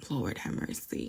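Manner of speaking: soft, muttered, whispered voice.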